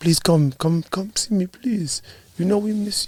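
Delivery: put-on, soft, near-tears, pleading voice. Retelling an older man begging him to visit more: imitating someone about to cry. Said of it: "he sounds like he's about to cry".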